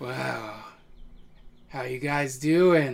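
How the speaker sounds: hill giant character voice. Voicing a hill giant greeting the players as they walk in: hill giant voice. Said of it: "hill giant ... and he goes".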